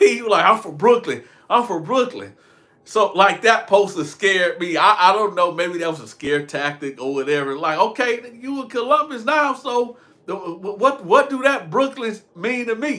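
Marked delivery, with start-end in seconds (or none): none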